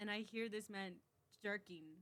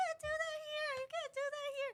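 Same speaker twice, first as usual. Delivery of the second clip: very high, shrill, loud, horrified screaming; 6 dB louder than usual. Retelling telling a drunk customer off: retelling own scream. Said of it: "I literally screamed".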